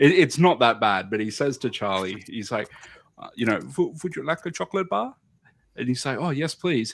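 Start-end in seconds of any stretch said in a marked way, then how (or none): 3.6-5.1 put-on German accent in a very high voice. Retelling Willy Wonka's line to Charlie, in a German accent. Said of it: "Why did you do it in a German accent?".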